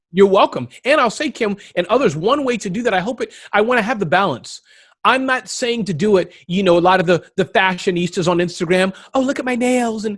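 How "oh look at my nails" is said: high put-on California fashionista voice. Speaker mocks Instagram fashionistas, in a put-on California voice. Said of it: "I put the California voice for all of them".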